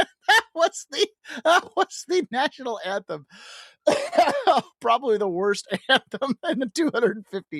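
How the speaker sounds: laughing through the words.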